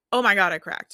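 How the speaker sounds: upset, distressed tone. Showing the "i suck" spiral reaction to a cracked note: upset self-blaming.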